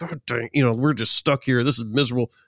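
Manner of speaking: put-on frustrated, irritated tone. Retelling being stuck in the middle of nowhere, retelling past frustration. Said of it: "I was super frustrated".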